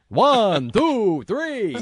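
high cartoon vampire voice. Describing how a character sounded, doing the Count from Sesame Street voice. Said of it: "he sounded like the Count from Sesame Street".

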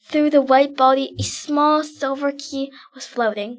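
ordinary delivery

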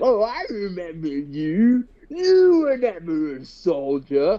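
swooping pitch with "you" drawn out. Quoting the one line from the game remake that made you mad, in a great Hojo impression. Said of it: "That's a great Hojo impression".

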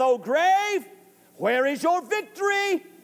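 jeering, goading, taunting tone. Quoting scripture to listeners, acting out a taunt at death. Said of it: "He is taunting death".

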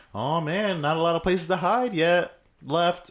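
put-on old man voice, high and slow. Retelling a movie scene, imitating an old man. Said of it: "the old man was like".

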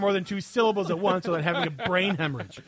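normal talking voice

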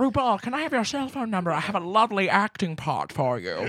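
put-on, swooping cartoon-villain voice. Playing a drag persona in a bit, speaking in a Grinch voice. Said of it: "I'm making her sound like the Grinch".

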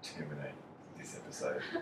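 mock, low, quiet, abrupt delivery cut off.

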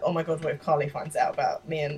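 ordinary talk, nothing marked

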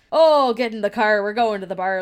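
loud yet low-key, light everyday pirate accent. Describing how locals by the sea talk, a speaker imitates them with a low-key pirate accent. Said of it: "you just have kind of a low-key pirate accent".

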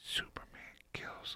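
hushed, very soft, barely voiced whisper. Announcing a movie spoiler to a co-host, whispering. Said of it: "so I'm gonna whisper it".

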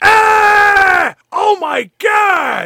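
very high, very slow, loud demon scream. Acting out a character who screams after hearing devil words: acted scream. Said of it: "Danny screams out".

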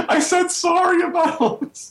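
play-acted, very high, drawn-out wailing sob-talk. Retelling what a sister said while bawling: imitating someone bawling. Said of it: "she just starts bawling".

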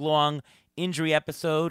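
ordinary talk, nothing marked

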